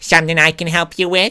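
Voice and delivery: high, cartoonish voice. Voicing a woman in the story as Lois from Family Guy: Lois from Family Guy voice. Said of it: "is that Lois?".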